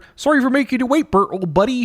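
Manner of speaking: cheerful high puppet voice. Retelling the ending of a Bert and Ernie book, Ernie voice. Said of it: "That's a pretty good Ernie".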